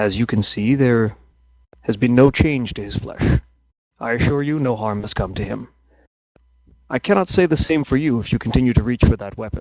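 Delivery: utterly unruffled, very calm, composed delivery. Game master voicing an elf answering a player reaching for his axe, very calm. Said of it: "very calm demeanor".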